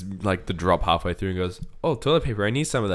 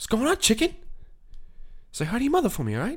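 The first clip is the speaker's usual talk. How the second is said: very high, sing-song mock voice with swinging pitch; 4 dB quieter than usual. Recalling a comedian's impression, doing a Mark Wahlberg voice. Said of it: "Andy Samberg doing Mark Wahlberg".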